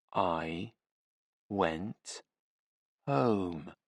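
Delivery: very slow, very quiet, low, hushed talking-down. A man being questioned answers as if speaking to a small child, very slow. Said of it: "he said very slowly".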